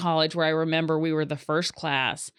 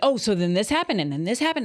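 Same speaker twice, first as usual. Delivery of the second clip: mock worked-up, animated chatter with swooping excited pitch; 5 semitones higher than usual. Retelling an animated family conversation: imitating excited raised voices. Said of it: "our voices raised, and we get really excited".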